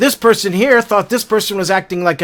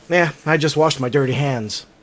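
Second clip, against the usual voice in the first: low, soft, plain matter-of-fact delivery; 6 semitones lower, 6 dB quieter than usual. Showing how one texted line can carry different emotions, matter-of-fact. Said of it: "I could do it as a matter of fact".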